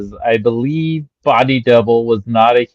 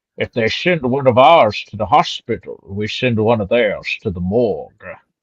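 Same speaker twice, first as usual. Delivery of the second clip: put-on voice with a Scottish accent. An American quoting the actor's line from a film, in a Sean Connery accent. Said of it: "trying to do a Sean Connery accent".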